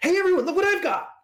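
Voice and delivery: very high, loud yell, calling out. Holding up a prism with a rainbow inside, yelling out to everyone. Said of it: "I'm just gonna yell out".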